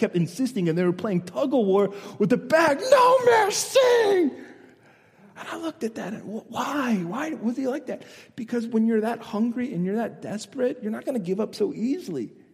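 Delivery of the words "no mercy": acted, shrill, very high-pitched insistent yell. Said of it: "shouting at this guy".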